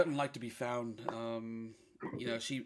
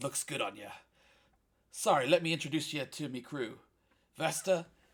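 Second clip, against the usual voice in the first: pirate character voice; 3 semitones higher, 4 dB louder than usual. Voicing Jimmy greeting an old friend: voicing Jimmy, a pirate. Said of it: "And he says".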